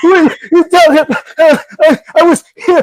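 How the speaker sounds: acted gasping, very high, very loud hyperventilating crying. Retelling being let go from a job, imitating own hyperventilating crying. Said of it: "doing the hyperventilating cries".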